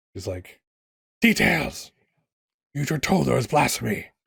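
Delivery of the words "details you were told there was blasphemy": scoffing, high, creaky possessed voice. Voicing a woman who speaks in another lady's voice: the lady's voice through her. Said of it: "you suddenly get a bit of, of the lady's voice in her voice".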